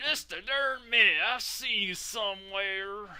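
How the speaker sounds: put-on overdone Southern accent, laid on thick, high. Narrating a scene, speaker voices a character in an exaggerated southern accent. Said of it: "I gotta do like a more exaggerated southern accent".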